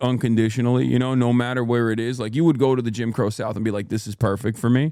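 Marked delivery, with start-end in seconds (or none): none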